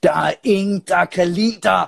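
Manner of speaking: mock furious outburst, angry shout pitched high. Telling a story, the speaker acts out an angry man shouting at the shop clerk. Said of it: "og så råber han ekspedienten".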